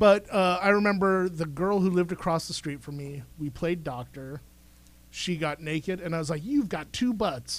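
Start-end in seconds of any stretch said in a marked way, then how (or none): 6.4-7.6 play-acted accusing tone. Retelling pointing at a girl across the street: accusing tone. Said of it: "so accusingly".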